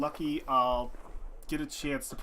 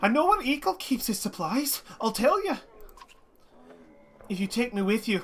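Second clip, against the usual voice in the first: bad put-on Irish brogue with raised pitch; 8 semitones higher, 4 dB louder than usual. Voicing a character the speaker says they hate, in a bad Irish accent. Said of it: "speak in this bad Irish accent I've given this guy".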